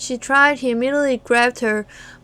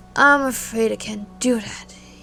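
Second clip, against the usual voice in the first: eerily composed and unbothered, unnervingly calm. Reading a story aloud, a killer refuses a plea: psychopathically calm. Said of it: "psychopathically calm".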